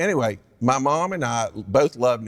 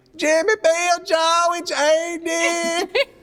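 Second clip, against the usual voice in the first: very high, very slow, loud, stretched-out calling voice; 6 dB louder than usual. Retelling how his mother sounds calling home: imitating his mother's voice. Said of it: "this is really what she sounds like".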